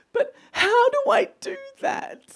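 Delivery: put-on very high, very slow, drawn-out crying child voice. Retelling how the child reacts when told to ask properly, imitating a child in tears. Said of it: "he'll be in tears because he's already emotional".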